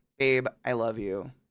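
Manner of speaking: ambiguous sarcastic tone, low and soft. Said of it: "is this sarcasm?".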